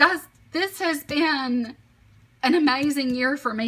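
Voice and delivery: choked-up voice, emotion catching in the throat. Speaker talks to viewers about the past year, choked up. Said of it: "I'm getting choked up just thinking about it".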